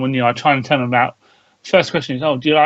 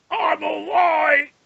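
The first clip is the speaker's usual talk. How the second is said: put-on strained voice, much higher pitch; 14 semitones higher, 3 dB quieter than usual. On a Star Wars show, the co-host answers the host's greeting in a strained Death Trooper voice. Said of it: "Why do you sound like you're constipated?".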